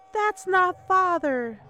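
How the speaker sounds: very high frightened cry. She speaks to her mother, who is enchanted by a tiger's magic: fearful voice. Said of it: "her voice full of fear".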